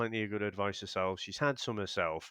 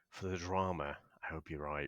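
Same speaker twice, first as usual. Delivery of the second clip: low, hushed late-night radio DJ voice; 5 semitones lower, 7 dB quieter than usual. A co-host weighs in on a couple's situation, deep nighttime radio voice. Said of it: "I love the way the voice went deep then".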